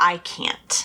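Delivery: ordinary delivery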